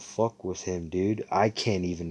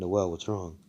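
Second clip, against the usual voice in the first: put-on sincere tone; 6 dB quieter than usual. Retelling a story, speaker quotes what he asked, mimicking a sincere voice. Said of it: "Like in a sincere voice".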